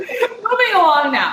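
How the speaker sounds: high, tearful laughter, holding back tears.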